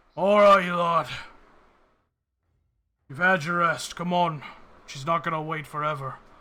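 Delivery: very loud, weary, gruff rousing voice. A groggy man steps out of a tent to rouse the group; tired, gruff voice. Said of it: "this like tired kind of gruff voice".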